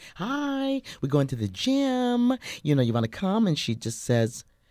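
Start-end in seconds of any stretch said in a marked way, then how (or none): 0.2-3.5 put-on very high, perky, upbeat voice. Retelling an invitation to the gym: imitating own perky past self. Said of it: "really perky".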